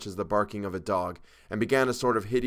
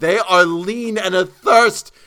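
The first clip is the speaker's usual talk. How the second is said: very high, very loud, drawn-out shrill shriek; 10 semitones higher, 13 dB louder than usual. A man answers the narrator's plea to quiet down, shrieking. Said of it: "he shrieked".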